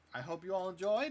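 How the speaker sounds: big booming voice. Grim comes back out of the tent to address the crowd: Grim's loud booming voice. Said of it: "in his loud, booming voice".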